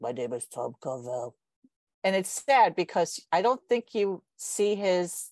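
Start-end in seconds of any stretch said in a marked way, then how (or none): 0.0-1.4 put-on very low, deep, rumbling old man voice. Describing the commercials' founder: imitating Tom Carvel's distinctive voice. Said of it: "he had this distinctive voice".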